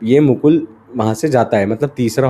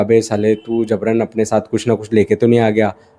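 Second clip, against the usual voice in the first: plain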